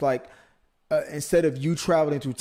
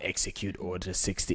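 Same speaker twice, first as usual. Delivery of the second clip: dark, evil emperor-like villain delivery; 8 semitones lower, 9 dB quieter than usual. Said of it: "I like doing the Palpatine voice".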